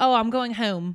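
put-on Philadelphia accent, o sounds. Retelling a date from Philly, imitating a Philly accent. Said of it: "They say O's".

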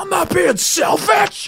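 acted, very high, drawn-out shouted yell. Retelling a quarrel over food: imitating someone yelling. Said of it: "he yelled at me".

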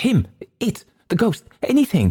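very high, wild, all-over-the-place frantic cry. Hurst answers the others asking what he has seen, wildly. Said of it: "said Hurst wildly".

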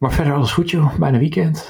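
light, casual chat. Talking beside a sleeping child's room, the speaker is talking softly. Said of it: "Ik praat een beetje zachtjes".

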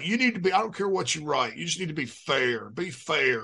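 put-on insistent, urging old newspaper editor voice. Retelling how an old editor talked: imitating his old editor Mickey. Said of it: "But he would always be like".

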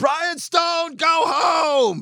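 very high, very slow, drawn-out yell. Retelling a friend yelling from a car window: imitating someone yelling. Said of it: "she yelled".

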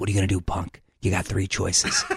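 low, soft, gravel-free put-on whisper. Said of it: "he talked like this".

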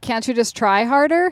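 plain

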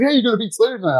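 bursting with excitement, very high-pitched voice. Retelling a writer bringing the night's match news: imitating someone super excited. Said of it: "super excited".

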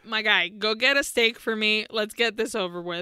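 ordinary talk

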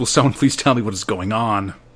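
normal talking voice

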